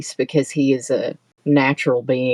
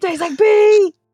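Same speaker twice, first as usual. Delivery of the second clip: put-on gagging, disgusted voice, higher and louder; 6 dB louder than usual. Retelling how Emmy reacted to a shot: imitating Emmy gagging in disgust. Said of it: "She starts gagging".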